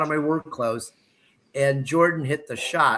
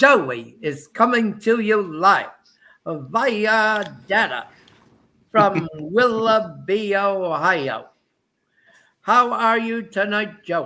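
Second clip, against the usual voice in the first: high, slow delivery with "via" drawn out; 5 semitones higher, 3 dB louder than usual. Introducing a guest who joins by phone data: Howard Cosell impression. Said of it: "as Howard Cosell would say".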